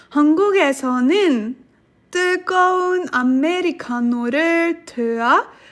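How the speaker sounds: fast read-aloud in Korean.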